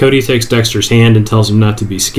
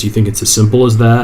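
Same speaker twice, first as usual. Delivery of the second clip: ordinary talk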